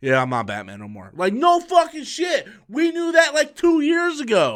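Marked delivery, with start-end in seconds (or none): 0.0-1.1 mocking celebrity send-up voice. Retelling Ben Affleck's later talk show admission: imitating Ben Affleck. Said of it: "shows up on, like, Jimmy Kimmel or something and is like".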